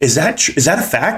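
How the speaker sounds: put-on skeptical tone. Retelling a reluctant woman's question, the speaker mimics her doubtful, second-guessing tone. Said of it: "She said it like like second guessing me".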